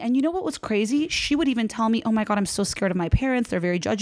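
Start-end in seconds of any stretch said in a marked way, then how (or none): none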